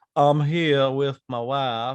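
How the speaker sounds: put-on polite, drawling voice. Retelling a polite movie line in a Nicolas Cage impression. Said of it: "in a very Nicolas Cage".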